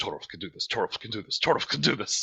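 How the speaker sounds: hushed, repeated whisper. Crossing fingers for an ally in a fight, whispering. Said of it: "crosses his fingers and starts whispering".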